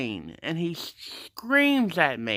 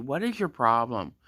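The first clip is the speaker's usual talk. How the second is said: plain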